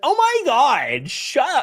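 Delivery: put-on high, slow, whiny Valley Girl accent. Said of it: "in his, like, weird Valley Girl accent".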